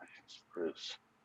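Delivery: hushed, whispered mutter under the breath. Voicing a character who kneels before the player: muttering under his breath. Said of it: "He mutters under his breath".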